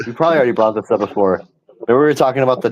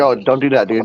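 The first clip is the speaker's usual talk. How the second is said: put-on casual, nonchalant, offhand and unbothered. Retelling what Hungry said about the donut box: imitating Hungry nonchalantly. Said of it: "nonchalantly like".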